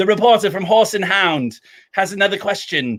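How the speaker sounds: very bad put-on British accent. Spoiling the ending of Notting Hill, quoting the press conference in a bad British accent. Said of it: "my worst, like, British accent".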